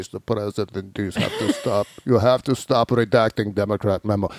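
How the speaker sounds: put-on low, soft Russian accent. Retelling Henry Kissinger telling the president to stop: Henry Kissinger with Russian accent. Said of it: "Suddenly, Henry Kissinger is Russian".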